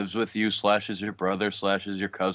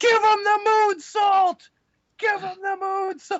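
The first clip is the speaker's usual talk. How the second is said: mock yell, high and slow. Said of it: "Bully Ray just goes".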